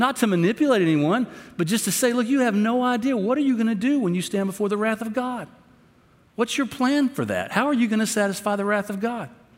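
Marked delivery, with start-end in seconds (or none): 2.1-9.3 impassioned, raised, passionate pleading tone. Showing how to urge someone about their plan: passionate emotional plea. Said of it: "There ought to be some passion in our voice".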